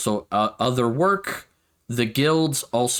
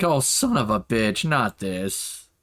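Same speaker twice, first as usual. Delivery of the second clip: slow, fed up exasperation, on the verge of crying. Voicing the entrance guard when a player approaches: almost crying in exasperation. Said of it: "like he's not crying, but he's just like".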